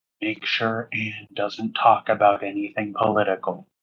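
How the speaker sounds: hushed, confidential, leaning-in half-whisper. Acting out a character leaning over to Clyde: imitating a half-whisper. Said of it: "lean over to Clyde and just whisper".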